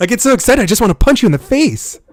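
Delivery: mock overexcited, high, loud, giddy gush.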